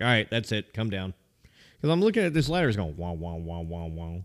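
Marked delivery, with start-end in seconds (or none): none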